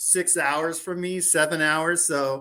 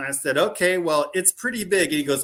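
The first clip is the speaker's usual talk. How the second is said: usual speaking voice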